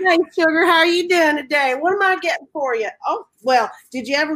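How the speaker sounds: sassy, high, sugary Southern waitress sweetness. Speaker describes the woman who works the window, imitating Jotsy May. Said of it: "And she's like".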